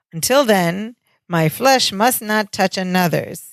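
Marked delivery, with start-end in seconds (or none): none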